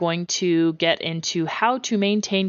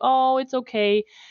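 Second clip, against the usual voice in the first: mock gentle, soothing, sympathetic tone, pitched higher; 7 semitones higher than usual. A parent describes her nine-year-old comforting a crying child; imitating a sympathetic voice. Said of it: "use that ba- like that that sympathetic voice".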